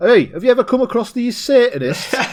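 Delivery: put-on thickest, broad, very high Yorkshire accent. Retelling what an expert asked the inspector, in a broad Yorkshire accent. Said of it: "In the most Yorkshire accent I've ever heard".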